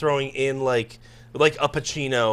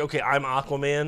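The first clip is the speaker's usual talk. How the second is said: plain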